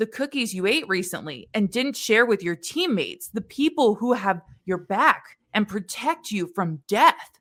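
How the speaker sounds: normal talking voice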